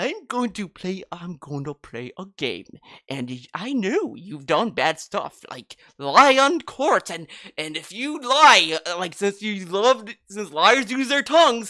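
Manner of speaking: put-on dopey, babyish baby-talk voice. Mocking the killer's stupid voice, imitating a baby-like voice. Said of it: "he sounds like a fucking baby".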